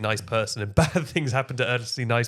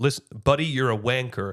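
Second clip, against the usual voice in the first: put-on American accent. Asked by a co-host to try an american accent, put-on american accent. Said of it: "Can you say the word wanker in an American accent?".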